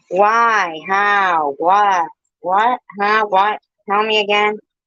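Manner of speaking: put-on high, slow little-kid voice. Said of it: "I sound like a little kid right now".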